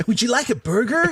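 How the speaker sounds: bad fake American accent. Trying an American accent for the other speaker: bad American accent. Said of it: "I don't think I do a very good American accent".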